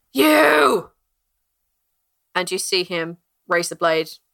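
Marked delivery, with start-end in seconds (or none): 0.1-0.9 sudden, loud, high shout, drawn-out 'you'. A game master voices a man who suddenly shouts at someone beside him, shouting. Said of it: "you guys hear the man shout".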